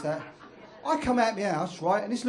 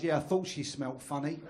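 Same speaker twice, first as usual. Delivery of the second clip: ordinary delivery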